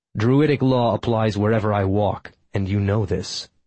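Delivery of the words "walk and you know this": ordinary delivery, nothing marked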